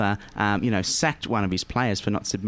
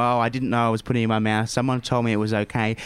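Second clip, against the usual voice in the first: plain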